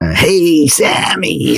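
big, croaky jazz-style voice. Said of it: "this big jazz, like, croaky voice".

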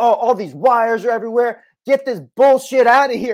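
over-the-top boisterous, high-pitched and loud bluster.

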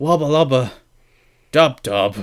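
wubba lubba, a beat, then dub dub. Imitating how he said the line on the show, pause before dub dub. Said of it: "he left the pause between the wubba lubba and dub dub".

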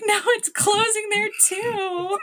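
high, choked-up, tearful mock wail, drawn out too long. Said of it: "and then I start, like, crying again".

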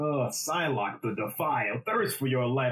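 eerie, haunting voice. Imitating the game character whose voice is called haunting: imitating Variks voice. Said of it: "Every time he says".

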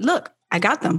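casual, downplaying, offhand throwaway delivery. Retelling how the wife announced getting the sneakers: imitating a nonchalant tone. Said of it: "She's very nonchalant with it".

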